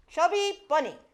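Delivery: said with conviction, mouth crammed full, loud, high. Playing chubby bunny with two marshmallows in the mouth: mouth full of marshmallows. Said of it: "I said that with such conviction".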